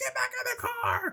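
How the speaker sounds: shrill, very high panicked scream. Retelling a scene where a lady screams as a man gets a gun, retelling a scream. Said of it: "The lady starts screaming like".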